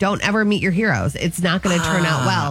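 normal talking voice

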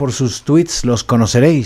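plain

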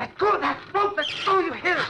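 frantic, very high, agitated pleading voice. Ordering the janitor to let go of the rope: frantic. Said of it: "You going crazy or something?".

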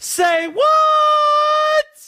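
very high, loud shouted squeak.

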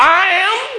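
high-pitched, fervent, earnest delivery.

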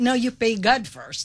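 talking through laughter, words slow and drawn out. Answering another speaker's money advice, laughing while talking. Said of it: "Why are you laughing?".

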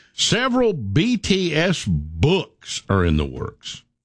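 dripping with contempt, very slow, disdainful. Reading a news item aloud: disdainful tone. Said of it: "the disdain in your voice reading that sentence".

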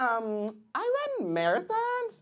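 put-on slow, drawn-out, swooping young woman's voice.

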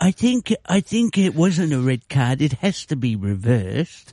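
attempted put-on voice, sounds English. Admitting they can't really do one, trying a Donald Trump impression anyway. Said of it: "You sound like someone from Salisbury".

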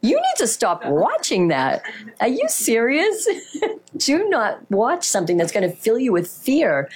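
mock, animated, disbelieving, incredulous scolding. Retelling their own reply to someone who reacted in fear, acting out an incredulous scolding. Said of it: "incredulous scolding retort performed".

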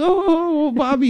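lovestruck schoolgirl swoon, very high, gushing. Imitating how an official talks about a colleague: imitating a swooning schoolgirl. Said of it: "like a schoolgirl".

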